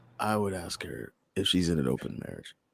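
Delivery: soft, hushed whisper under the breath. Admitting a private wish with others listening: whispering. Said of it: "had to whisper that one".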